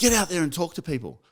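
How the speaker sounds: put-on barking voice. Retelling how the company owner ordered them onto the floor: imitating someone barking an order. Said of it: "barks at me".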